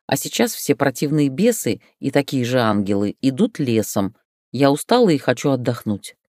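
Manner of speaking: plain reading voice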